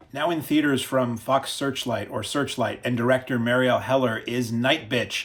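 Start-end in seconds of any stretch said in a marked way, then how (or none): 4.5-5.2 stress on night in night bitch, bitch kept light. Naming a movie title: stress on 'Night'. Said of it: "I'm putting the emphasis on the first part of that and not the second".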